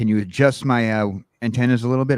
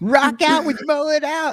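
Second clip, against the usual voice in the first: put-on tiny cartoon-kid voice, very high pitched; 3 dB louder than usual. Repeating a performer's line, in a little kid from Dinosaurs voice. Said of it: "you sound like the little kid from Dinosaurs".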